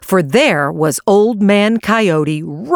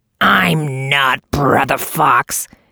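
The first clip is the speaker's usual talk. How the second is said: deep, horrid-sounding voice, lower; 5 semitones lower than usual. Reading a story aloud, a character suddenly snaps in a deep, horrid-sounding voice. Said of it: "snapped in a deep, horrid-sounding voice".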